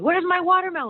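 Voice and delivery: put-on cranky, grouchy yell, very high and loud. Retelling how a grouchy man yelled at them, retelling a grouchy yell. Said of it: "he was grouchy and he yelled at me".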